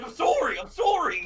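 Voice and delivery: play-acted very high, very loud, shrill frightened voice. Reliving being yelled at by a grandmother, the speaker retells a scared apology. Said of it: "I'm getting yelled at by my grandmother".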